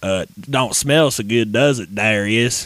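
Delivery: put-on western villain voice. Describing a deleted scene where the Creeper talked, Creeper Western-style voice. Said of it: "he had a Western like voice. He talked like this".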